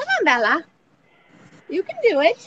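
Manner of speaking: encouraging, high, loud, sing-song coaxing.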